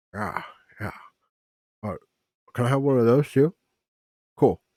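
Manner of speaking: speaking with mouth full of food. Voicing a character eating at a table: talking with mouth full. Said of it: "has one in her mouth as she's like".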